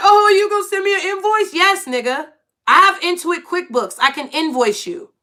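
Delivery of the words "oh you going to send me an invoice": high-pitched, acted talking through laughter. Retelling someone's reaction to being offered an invoice: imitating someone laughing while talking. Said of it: "He was laughing like".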